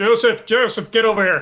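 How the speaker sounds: voice calling out. Calling another character over during the game scene: yelling. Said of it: "I'm yelling at him anyway".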